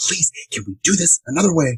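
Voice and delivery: furious half-whisper. Acting Harry furiously half-whispering at Dobby in public, furious half-whisper. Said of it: "furiously whispers at Dobby and says".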